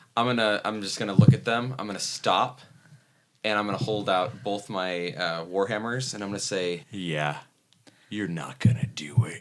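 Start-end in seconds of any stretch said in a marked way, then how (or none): 6.8-9.4 low, menacing, intimidating voice. In a tabletop game, a player speaks as their character to knife-holding foes: intimidating. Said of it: "I'm trying to use intimidation".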